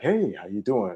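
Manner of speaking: showy, self-satisfied, smug, charming inflections. Comparing a character's two voices, first the public one: Bruce Wayne voice. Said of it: "you see the voice inflections when he's Bruce Wayne".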